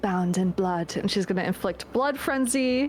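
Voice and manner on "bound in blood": low murmured whisper under the breath. Voicing a character casting a blood spell: murmured under her breath like a prayer. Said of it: "under her breath, like a prayer".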